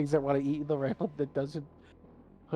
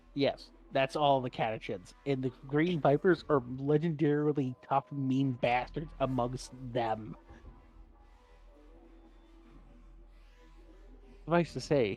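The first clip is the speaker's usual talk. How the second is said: ordinary talk, nothing marked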